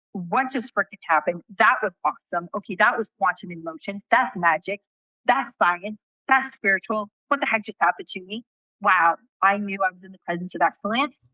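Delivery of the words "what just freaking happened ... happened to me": usual speaking voice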